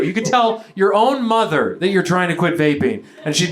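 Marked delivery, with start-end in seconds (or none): none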